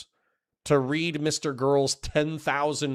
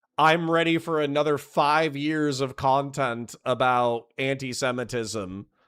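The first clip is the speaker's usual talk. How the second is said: normal talking voice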